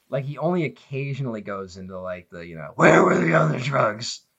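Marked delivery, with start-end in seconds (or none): 2.7-4.2 harsh, gravel-throated caped-hero voice. Complaining about a film's hero voice, imitating it: Batman voice. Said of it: "the Batman voice in this movie".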